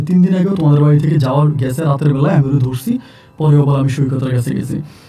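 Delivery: ordinary delivery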